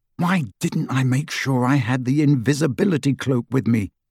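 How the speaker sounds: ordinary delivery, nothing marked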